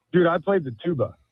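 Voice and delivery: plain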